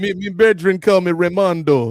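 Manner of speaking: mock, put-on Jamaican accent. Joking about a friend who suddenly speaks with a Jamaican accent: imitating Ray's put-on Jamaican accent. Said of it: "Just developed a Jamaican accent out of nowhere".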